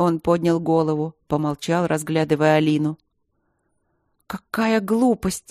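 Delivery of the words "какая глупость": furious, angry, blurted outburst. A woman breaks the silence, addressing the professor, with a furious outburst. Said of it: "выпалила она яростно".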